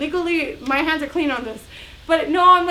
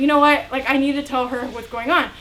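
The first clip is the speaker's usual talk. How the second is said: ordinary delivery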